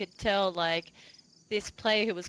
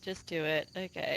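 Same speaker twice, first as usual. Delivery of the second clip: mock resigned, weary tone, quieter; 3 semitones lower, 4 dB quieter than usual. Comparing it to a parent watching kids: imitating a resigned parent. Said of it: "the parents sitting there going".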